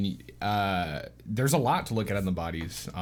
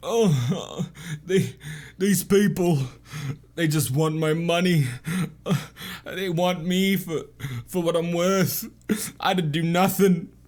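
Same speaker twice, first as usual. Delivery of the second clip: high, louder pleading voice. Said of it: "he said".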